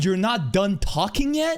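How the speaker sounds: loud shout, pitch climbing as it goes. Retelling what she yelled in the scene: imitating someone yelling. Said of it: "She's yelling".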